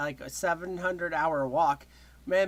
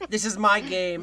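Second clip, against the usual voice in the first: put-on bragging voice, louder; 5 dB louder than usual. Imitating what John says as he comes in: imitating John. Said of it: "He just came in and he's like".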